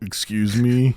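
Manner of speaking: mock flat, emotionless monotone man's voice. Retelling an office request to buy Girl Scout cookies, imitating a monotone, emotionless man. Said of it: "why are you doing his voice dirty like that".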